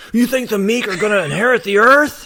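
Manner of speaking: sudden, abrupt, very high, loud yell. Retelling a film scene where Doyle suddenly shouts: imitating Doyle shouting. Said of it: "And then Doyle just suddenly shouts".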